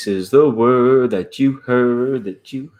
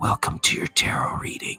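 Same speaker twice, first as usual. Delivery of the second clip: soft whisper right into the microphone. Imitating people who whisper into microphones for a tarot reading, whispered into the microphone. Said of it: "People will like whisper in their microphones. They go like".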